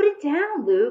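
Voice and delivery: curt, sharp, high snapped delivery. A sister speaks to her brother, snapping. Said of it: "Lucy snapped at her brother".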